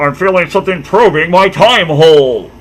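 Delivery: very high, booming character voice, slow, "tube" stretched out. Redoing a line in the Zordon voice: Zordon voice. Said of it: "I gotta do the Zordon voice for this".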